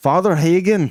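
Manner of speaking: put-on Scottish accent. Speaker asked to say a name with a scottish accent. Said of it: "Say it with a Scottish accent".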